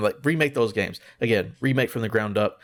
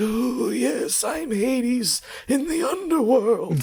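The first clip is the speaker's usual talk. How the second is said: put-on voice pitched way up and drawn way out. Imitating an actor's performance in a movie: Voldemort voice. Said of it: "doing the exact Voldemort voice".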